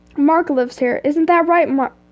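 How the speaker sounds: ordinary delivery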